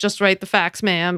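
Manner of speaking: ordinary delivery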